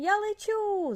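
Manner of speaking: laughed out, very high laughing cry. Narrator reads a little brontosaurus lifted high by a water fountain, laughing. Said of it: "засміявся Бронько".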